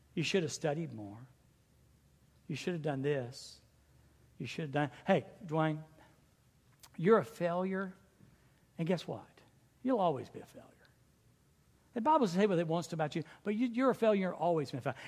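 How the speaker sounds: soft, hushed, close stage whisper. Acting out Satan's voice calling the listener a failure: Satan half-whispering. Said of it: "he whispers this junk into our ears".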